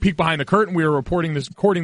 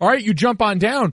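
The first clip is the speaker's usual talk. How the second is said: mock casual calling out, pitched high; 5 semitones higher than usual. Retelling the tour guide calling up from below the bridge: imitating someone yelling. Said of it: "yells up to us and goes".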